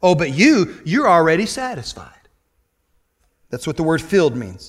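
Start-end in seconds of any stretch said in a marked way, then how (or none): 0.0-2.1 mocking, ironic, sarcastic jab. Explaining verse 8 of chapter 4, the speaker quotes him in a mock-sarcastic tone. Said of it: "He goes sarcastically and ironically".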